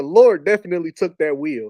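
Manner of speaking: ordinary delivery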